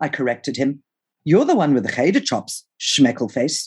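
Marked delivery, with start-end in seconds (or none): none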